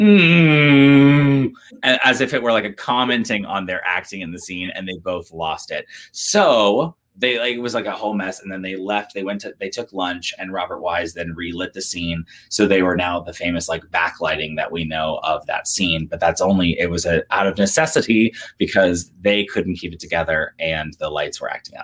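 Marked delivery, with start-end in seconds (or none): 0.0-1.5 high, loud mock groan like a sputtering lamp. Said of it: "the lights would just go".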